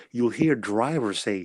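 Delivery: ordinary delivery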